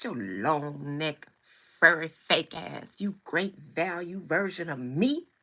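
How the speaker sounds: slow, low, loud, drawn-out, spat-out cussing. Imagining alpacas and sheep insulting each other: imitating an alpaca cussing. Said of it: "the alpacas and the sheep cussing each other".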